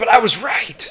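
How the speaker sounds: very high, loud put-on character voice. Voicing old Crazy Pete, whom others called crazy: Crazy Pete voice. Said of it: "well now I gotta do a voice for Crazy Pete".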